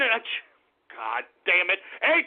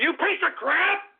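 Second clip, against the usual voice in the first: seething, heated, angry outburst, pitched up; 6 semitones higher than usual. Losing temper on air, then apologizing: angry outburst. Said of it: "I gotta calm down here".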